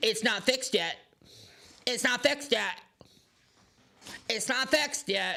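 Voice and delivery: put-on high-pitched whiny nagging voice, repeated. Defending the economic record, speaker mimics a complainer in a mocking whiny voice. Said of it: "you sound like a whiny bitch".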